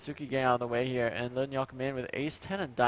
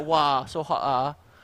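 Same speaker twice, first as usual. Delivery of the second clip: Singaporean lilt, drawn out very slow; 6 dB louder than usual. Showing how a Singaporean says a phrase: Singaporean accent. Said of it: "Singaporean kind of thing".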